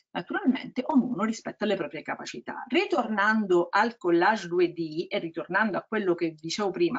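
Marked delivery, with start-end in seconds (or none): 0.1-2.6 rattled off fast. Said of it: "scusate se parlo veloce".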